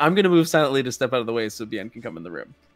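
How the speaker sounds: normal talking voice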